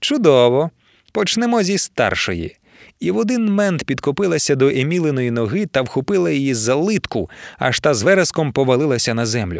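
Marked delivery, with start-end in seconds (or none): 0.0-2.6 mocking, taunting tone. Narrator reads a woman confronting three girls before a fight, speaking mockingly. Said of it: "насмішкувато проказала Адольфина".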